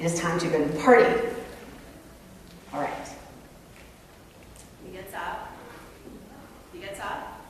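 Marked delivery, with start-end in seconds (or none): 0.0-1.0 fast, really somewhat irritated voice. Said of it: "in a really somewhat irritated voice".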